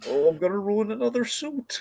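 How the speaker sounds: sheer desperation throughout, high pitched, lamenting tone. Retelling a comedy scene, quoting a character: desperate Liam Neeson impression. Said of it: "the desperation within Liam Neeson's like".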